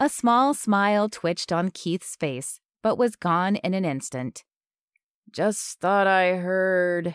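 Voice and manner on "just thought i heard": tapering off, voice fading out unfinished. Reading a father who has just greeted his son, then trailing off. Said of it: "He trailed off".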